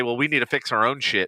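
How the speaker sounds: plain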